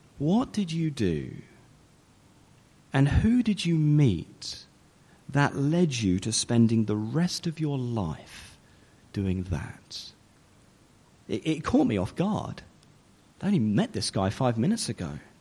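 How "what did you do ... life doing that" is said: acted-out, heavily condescending, thoroughly unimpressed tone. Retelling a man's reply after hearing he trains to be a pastor, mock-condescending tone. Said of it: "in the most condescending tone".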